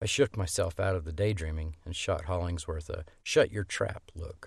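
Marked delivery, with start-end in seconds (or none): none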